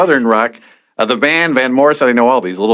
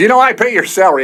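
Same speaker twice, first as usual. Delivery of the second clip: angry, pitched-up, berating tone; 9 semitones higher than usual. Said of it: "started berating him".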